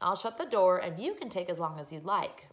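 ordinary delivery

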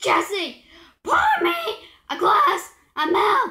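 loud calling out. In a scene about milk, calling to Jesse, yelling. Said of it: "Why are you yelling at me?".

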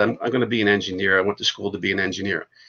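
plain

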